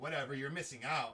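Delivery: annoyed, mad, dismissive brush-off tone. Retelling a girl who walked away on hearing the speaker is engaged, imitating an angry woman. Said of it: "Why are you so mad?".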